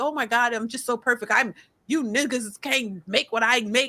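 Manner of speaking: play-acted smug, self-satisfied, boastful tone. Mocking people bragging about their job: imitating smug boasting. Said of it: "sitting up here ... on this high pedestal".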